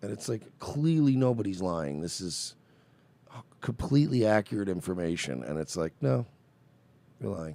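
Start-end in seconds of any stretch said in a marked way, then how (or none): 6.0-7.6 mock dry, expressionless, dismissive deadpan. Describing how he answers completely accurate information, imitating his deadpan. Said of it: "just deadpan and go".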